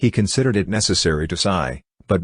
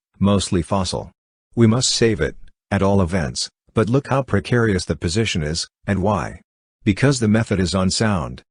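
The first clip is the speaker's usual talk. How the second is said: usual speaking voice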